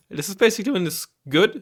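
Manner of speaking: voice breaks partway through, jumping high. Explaining deck tiers on an early-morning recording, voice cracking. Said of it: "voice crack".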